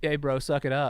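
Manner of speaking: ordinary talk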